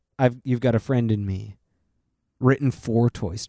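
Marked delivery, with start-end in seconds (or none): none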